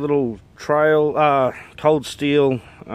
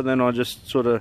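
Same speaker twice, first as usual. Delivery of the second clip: ordinary talk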